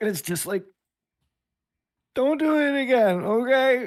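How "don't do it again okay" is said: sniffly, pitched-up voice after a big sniff. Acting out Sarah's reply to an apology for cutting her plant, imitating Sarah's big sniff. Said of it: "does just like this really big like sniff".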